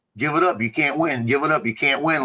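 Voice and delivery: ordinary talk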